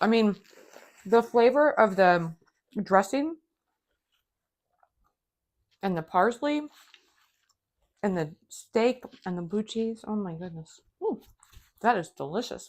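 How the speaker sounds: speaking while chewing, mouth full of food. Speaker tasting a steak and blue cheese recipe, talking with mouth full. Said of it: "let me chew this up".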